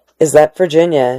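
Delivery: ordinary delivery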